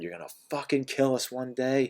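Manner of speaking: put-on furious screaming, high and rising in pitch. Retelling how the mother screamed about the smoke-filled house: imitating mother screaming. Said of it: "just screamed at me and said".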